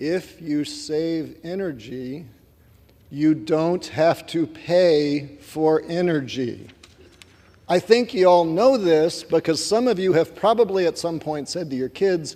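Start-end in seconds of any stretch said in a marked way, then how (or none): 0.0-6.7 very slow, deliberate delivery, every word laid out. Addressing everybody across the aisle, saying this very slowly. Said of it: "I'm going to say this very slowly".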